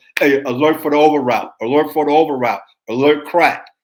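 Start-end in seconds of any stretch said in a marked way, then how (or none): none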